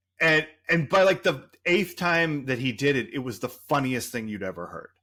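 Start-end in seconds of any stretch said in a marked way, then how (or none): none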